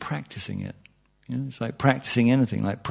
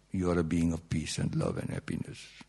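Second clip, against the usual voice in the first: very soft, low, hushed put-on Indian accent; 5 semitones lower, 9 dB quieter than usual. Addressing his listeners, telling them this in his indian accent. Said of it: "I tell you in my Indian accent".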